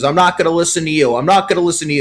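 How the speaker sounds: put-on high-pitched New Jersey accent. Speaker retells an ejection, quoting Phil Cuzzi in his New Jersey accent. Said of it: "in his New Jersey accent".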